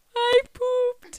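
very high, loud bawling wail, sobbed through tears. Retelling telling the teacher, imitating own past crying. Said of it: "literally bawling my eyes out".

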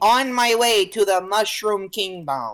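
put-on random drop into a Brooklyn accent. A podcaster quotes the Mario movie line in Chris Pratt's Brooklyn Mario voice. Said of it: "in the most random Brooklyn accent".

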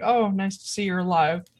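very thick, heavy, dripping sarcastic jab. Voicing a character who answers a message: very sarcastic. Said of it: "with a very sarcastic".

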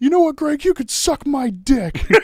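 mock very high-pitched schoolyard child yelling. Retelling a third-grade kickball argument between buddies, imitating Timmy yelling. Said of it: "and Timmy yells".

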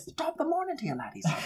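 put-on very high, soft, hushed, squeaky Irish accent. Reacting to how an ostrich whipped its head, in a Jacksepticeye Irish accent. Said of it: "He's Irish".

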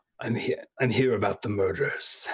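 hushed stage whisper. Playing Lord Winter, leaning in close to a stranger: half-whispering into his ear. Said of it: "I lean in and whisper into his ear".

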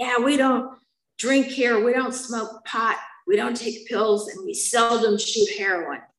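high, hard yell at full force. Recalling a tall man who stood them on a chair, the speaker imitates his yelling. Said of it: "he's yelling at me".

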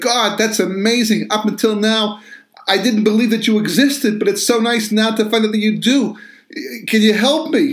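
high, excited gushing.

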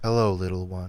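very low, soft, meditative flat drone. Describing how a man always talks, imitating his monotone. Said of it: "He seemed so monotone".

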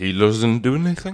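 put-on drunk voice. Retelling how a wobbling Orson leans to the next person: imitating drunk Orson Welles. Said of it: "fucking wobbling".

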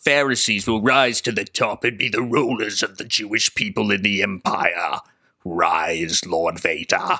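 dropped low voice with the last word stretched. Recapping a scene as a Star Wars villain: Darth Palpatine impression. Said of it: "You sound uncannily like him".

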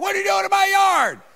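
piercing, shrill, very high scream. Retelling how a yard owner came out at him: imitating someone screaming. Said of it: "they'd come out screaming at me".

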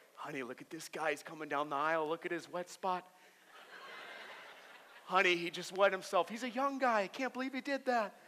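fast, low, hushed, gossipy voice. A speaker describes people staring at his wet stain: imitating gossiping onlookers. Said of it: "they look at you like".

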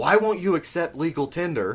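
high, heated yelling. Retelling an argument in a courtroom, repeating what they yelled at him: retelling own yell. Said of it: "I'm just yelling at him".

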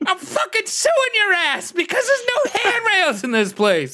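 very high, outraged, crying rant.

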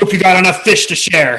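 gruff, commanding bark. Strutting into a camp like a Hobgoblin war chief: barking orders in Hobgoblin. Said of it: "barking orders in Hobgoblin".

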